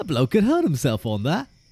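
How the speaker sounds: high, sing-song, swooping country yokel voice. Speaker attempts a line in the Baldrick voice for the guys listening. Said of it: "Be more country bumpkin".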